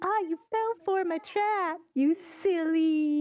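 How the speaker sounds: high, slow, unhinged crazy-villain madman voice, taunting. Mimicking the crazy dude to manipulate someone: voice copying the crazy dude. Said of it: "manipulate my voice to sound just like crazy dude".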